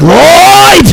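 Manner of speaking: very high, sudden calling out. Joking what an actor's character would shout: Ari Gold voice. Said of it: "I was waiting for him to just be like".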